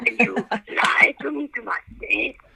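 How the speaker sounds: rough, creaky, raspy mafia boss voice. Accusing another speaker of lying about recording, imitating the Godfather. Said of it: "I'm trying to be like the Godfather".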